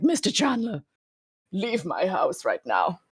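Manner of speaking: hoarse, hushed, softly rasped possessed voice. Comparing someone to Eva Green in Penny Dreadful after demon possession: hoarse Eva Green possessed voice. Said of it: "this horse I've just been possessed by a demon for a little bit voice".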